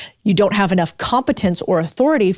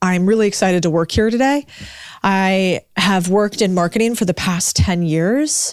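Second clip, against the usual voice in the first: upspeak, rising uptick at each sentence end. Demonstrating a bad tone in a self-introduction: rising uptick at sentence ends. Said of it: "A bad example of a tone ... I'm getting an uptick at the end of each sentence".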